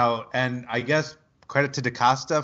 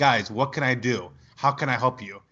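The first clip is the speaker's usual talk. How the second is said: mock, acted-out pleading tone. Retelling a player's words to his offensive line, acting out pleading. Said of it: "he was pleading".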